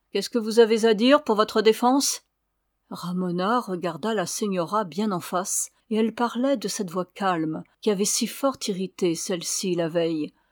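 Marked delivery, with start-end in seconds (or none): 0.1-2.2 contemptuous, scornful tone. The signora questioning another woman, in a contemptuous tone. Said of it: "elle demanda d'un ton méprisant".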